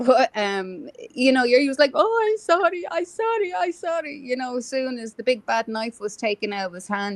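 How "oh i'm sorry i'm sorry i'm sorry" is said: mock crying, higher. Retelling how a man apologized after the knife was taken: imitating someone crying. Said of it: "he was crying like a baby".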